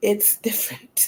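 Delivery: low, deep, hushed, breathy near-whisper. Talking about living with sickle cell as a parent: deep tone. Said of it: "I would say it in that tone every single time".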